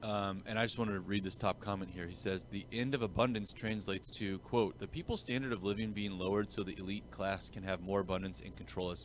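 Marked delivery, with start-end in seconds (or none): none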